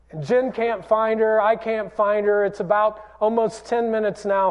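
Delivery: ordinary delivery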